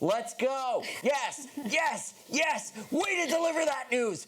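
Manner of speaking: high, rising, excited cheering whoops.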